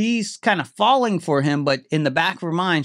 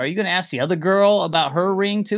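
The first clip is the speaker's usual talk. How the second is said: ordinary talk, nothing marked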